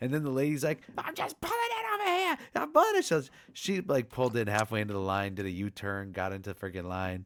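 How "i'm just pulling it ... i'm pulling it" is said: mock yelling, pitched way up, high and shrill. Telling about an argument over a line, quoting the lady, retelling a yell. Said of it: "they were just yelling for like 5 minutes".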